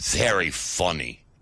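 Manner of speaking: said with a snort. Chand, answering the doctor's remark about the island, with a snort. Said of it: "snorted Chand".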